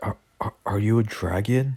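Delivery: mock freaked-out, frightened, stammering start. Voicing Asta meeting a talking dragon: freaked out. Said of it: "Asta would kinda be freaked out".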